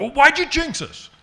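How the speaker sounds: shrill, very loud, high-pitched accusing yell. Retelling a pitcher's angry question on the plane: imitating someone yelling. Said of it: "He yelled at me like that".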